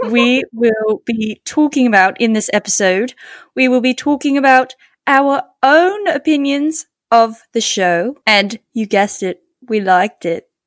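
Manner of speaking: put-on, fake British English accent. Opening a podcast episode about Bridgerton: put-on British accent. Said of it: "we both started doing this episode with British accents".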